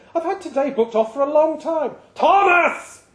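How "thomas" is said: put-on loud, angry barking voice with a German accent. Calling Thomas to come in to work, bark his name angrily. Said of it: "he barked".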